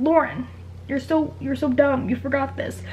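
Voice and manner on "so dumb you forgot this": ordinary talk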